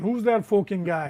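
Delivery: put-on Irish accent. Quoting the words printed on a shirt, in an Irish accent. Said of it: "because that's the Irish accent".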